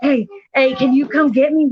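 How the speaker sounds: breathless, gasping and panting voice. Retelling a friend's phone call asking to be picked up: imitating someone out of breath. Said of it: "he's out of breath".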